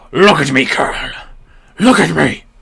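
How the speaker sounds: booming, very loud, rough, creaky growl. Narrator reading an unseen voice calling to the Colonel: growl shaped into words. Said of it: "little more than a growl shaped into words".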